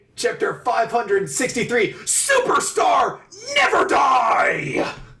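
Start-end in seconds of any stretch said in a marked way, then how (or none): 2.0-5.0 shouting, higher. Reading out a title in all capital letters: yelling. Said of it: "I have to yell".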